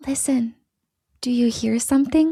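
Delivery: put-on eerie, creepy little-kid voice. Retelling a new voice that came through with subtitles, in a creepy child voice. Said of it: "the subtitles describe it as a creepy child voice".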